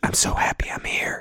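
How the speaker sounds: little soft, sultry whisper. Showing how to draw someone close before a first kiss: little sultry whisper. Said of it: "a little sultry whisper".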